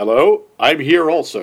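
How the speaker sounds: very slow, drawn-out mocking voice. Mocking the film's villain husband as a dull bad guy: mocking the husband character. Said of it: "the husband is like".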